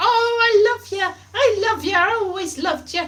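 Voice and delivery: put-on Welsh accent. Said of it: "Only with a Welsh accent, probably".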